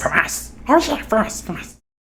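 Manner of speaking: breathy, whispered character voice, mostly breath. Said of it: "Smeagol voice impression".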